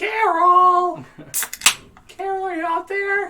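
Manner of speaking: shrill, very high, very loud yell, word stretched. Recounting turning around to call for Carol: retelling a yell for Carol. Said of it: "I just turned around and yelled".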